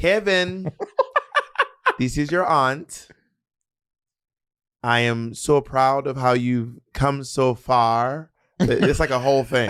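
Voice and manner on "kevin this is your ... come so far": put-on West Indian accent, much slower pace. Speaker imitates the aunties in a birthday video, west indian aunt accent. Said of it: "They'd be like".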